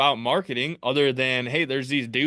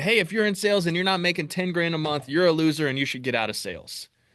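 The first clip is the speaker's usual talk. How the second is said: mock pushy screaming rant; 3 semitones higher than usual. Retelling a video where someone was screaming at salespeople: imitating someone screaming. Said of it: "someone on YouTube screaming".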